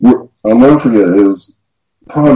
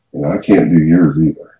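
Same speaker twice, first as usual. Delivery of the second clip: put-on, even quieter and lower voice; 4 semitones lower than usual. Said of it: "And then even quieter".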